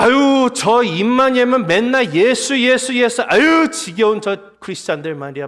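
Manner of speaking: put-on contemptuous, scoffing sneer. Explaining how people scoffed at Christians, acting it out: mock sneering tone. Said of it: "비아냥거려서 비꼬이는 표현입니다 ... 이렇게 말하는 거였어요".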